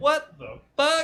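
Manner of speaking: very high, really loud yelling outburst. Retelling an outburst in the middle of class: retelling a loud yell. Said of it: "Real loud".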